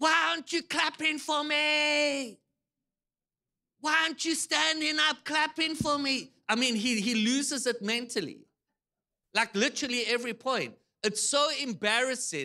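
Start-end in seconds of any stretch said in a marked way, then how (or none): 0.0-6.3 demanding screamed outburst with long stretched-out "me". Speaker retells a player screaming at the Prince and Princess of England, retelling a scream. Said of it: "So he literally screams".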